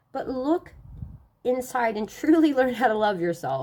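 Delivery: crying through the words, tearful, voice breaking. A spiritual speaker addresses listeners, crying. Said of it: "I didn't mean to cry on that".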